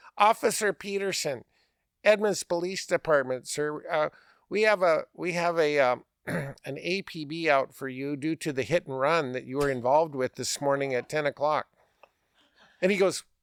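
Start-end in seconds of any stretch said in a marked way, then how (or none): none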